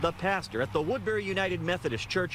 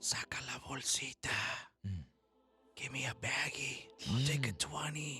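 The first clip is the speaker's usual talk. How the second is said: hushed half-whisper, close to the ear; 6 semitones lower, 9 dB quieter than usual. Speaker acts out a guy coming up to a pastor at church, retelling a half-whisper. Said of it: "he goes and whispers in your ear".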